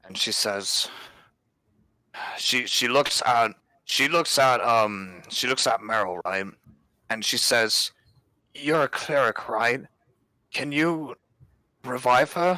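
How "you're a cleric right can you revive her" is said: crying, high-pitched, sobbing, pleading voice. Narrating a game scene, Sierra looks at Meryl the cleric, Sierra sobbing. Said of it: "Sierra sobs up".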